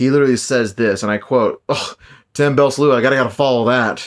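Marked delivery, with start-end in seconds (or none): 1.7-4.1 sarcastic through and through, wisecracking. Retelling a quip he made in the locker room at a wrestling show: imitating a sarcastic remark. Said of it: "sure to the bone with his sarcasm".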